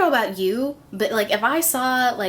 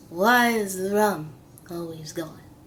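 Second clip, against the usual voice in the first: badly done, swashbuckling put-on pirate voice; 3 semitones lower than usual. Describing how people picture sailors, terrible Johnny Depp pirate impression. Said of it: "terrible impersonation".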